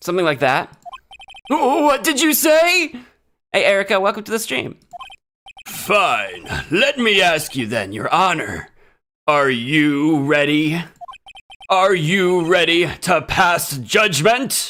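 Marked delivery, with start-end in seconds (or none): 5.7-14.7 deep cool voice, much slower. Streamer plays a character questioning the judge in a courtroom scene: deep, cool voice. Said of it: "deep, cool voice".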